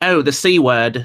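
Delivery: put-on British accent. Reading viewer chat messages aloud, the speaker tries out a british accent. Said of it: "read chats with a Brit accent".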